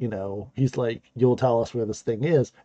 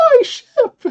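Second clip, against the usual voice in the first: very high-pitched, squeaky wailing shriek; 8 dB louder than usual. Retelling an episode moment when a ship goes over a waterfall, imitating a high squeaky scream. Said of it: "so high-pitched and squeaky".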